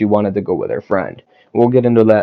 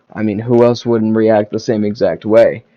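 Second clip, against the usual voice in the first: ordinary talk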